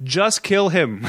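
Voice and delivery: mock crying out, pitched high. Recapping a film scene, the speaker mimics the audience screaming. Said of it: "basically screaming what the audience is screaming".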